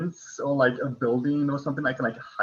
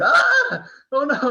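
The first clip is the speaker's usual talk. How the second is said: very high, loud, frightened shriek; 13 semitones higher, 7 dB louder than usual. Playing a character startled by a talking rock: loud scream in fright. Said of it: "I immediately, like, scream".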